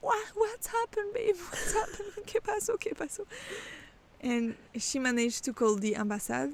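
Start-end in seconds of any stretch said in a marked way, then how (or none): 0.0-3.3 very high-pitched, tearful crying voice. Retelling mom's reply on the phone, imitating mom crying on the phone. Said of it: "my mom was crying on the phone".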